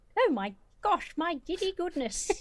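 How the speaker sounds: exaggerated, very high, sing-song British accent. Showing how using a safe exclamation makes one sound: sounding very british. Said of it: "you just sounded so British".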